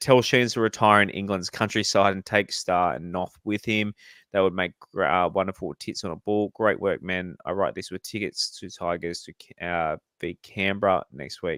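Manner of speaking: usual speaking voice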